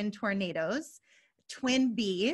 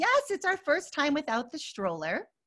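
mock cheerful, chipper, bright sing-song; 6 semitones higher than usual. A parent recounting answering a fellow shopper at the store: retelling her chipper reply. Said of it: "I hear my chipper voice say".

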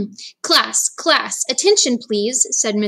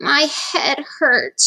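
self-pitying moan; 4 semitones higher than usual. Sarah, just out of bed, trudges into the kitchen, moaning. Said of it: "she moaned".

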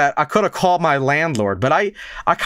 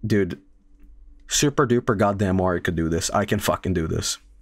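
frustrated, exasperated voice; 7 semitones lower, 4 dB quieter than usual. Retelling fixing a sink pipe with a hurting back: retelling frustrated self-talk. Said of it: "I'm so frustrated".

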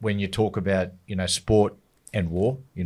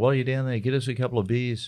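mild, relaxed calling out; 3 semitones higher than usual. Retelling what two people called out from their seats: imitating someone yelling out. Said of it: "they're yelling out".

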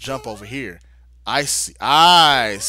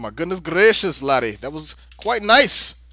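terrible, clearly fake Irish brogue; 6 semitones higher than usual. Praising a level that uses mechanics well, bad put-on Irish accent. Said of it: "with my horrible, supposedly Irish accent".

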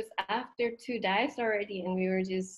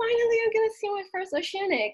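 put-on thrilled gush, very high and quick; 13 semitones higher, 4 dB louder than usual. Retelling the moment before seeing a first oceanic manta, retelling past excitement. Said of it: "So I was so like full of excitement".

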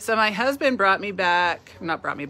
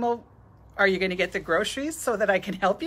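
normal talking voice

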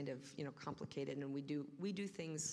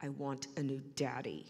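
slow, loud, spiteful, venomous jab; 5 dB louder than usual. Retelling what was said to Santa at nine: imitating a venomous remark. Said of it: "with as much venom as I could muster".

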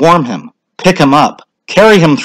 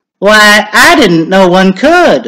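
exclaiming, pitched up, drawn out; 5 semitones higher than usual. Mrs. Halloran responds to Ned saying he is swimming across the county, exclaiming. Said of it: "exclaimed Mrs. Halloran".

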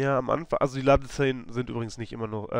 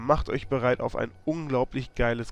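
ordinary talk

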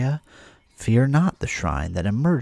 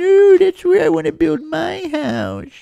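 very high, loud, sad, sing-song whine; 7 dB louder than usual. Retelling claiming a spot to build a house, imitating their own whiny, sad voice. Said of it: "I sounded so whiny and sad".

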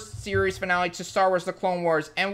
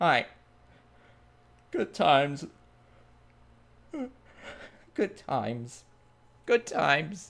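tearing up, lower and quieter; 4 semitones lower, 4 dB quieter than usual. Talking about a beloved character growing up, starting to cry. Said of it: "I'm actually starting to cry".

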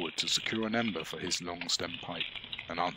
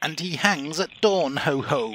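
grating, shrill, very high, loud gloating laugh; 9 semitones higher, 11 dB louder than usual. Narrator reading a speaker laughing to his hearers, high-pitched grating laugh. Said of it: "laughed in a high-pitched, grating voice".

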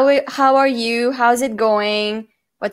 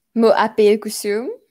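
ordinary delivery

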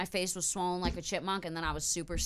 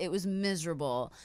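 usual speaking voice

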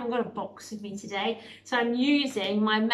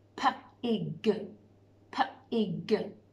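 robot voice, "pig" split into p, then ig. Showing children how to sound out a word: robot talk, sounding out. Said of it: "I'm going to say it in robot talk".

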